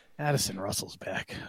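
uneasy, disturbed, breathy whisper. Show the others how to say the breaking news about Addison Russell, sounding disturbed. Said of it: "need to sound more disturbed".

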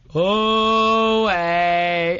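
loud group voices hollering together in unison.

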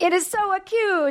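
very high, slow, terrible put-on Italian accent. Telling a story in the studio as a joke, terrible italian accent. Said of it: "that terrible Italian accent joke".

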